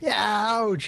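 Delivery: put-on very high, girlish, teenage yelp of pain. Voicing a hit teenage witch scout: screaming in a teenage voice. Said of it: "she screams out in her teenage voice".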